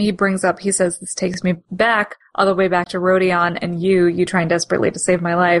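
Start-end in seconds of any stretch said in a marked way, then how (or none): none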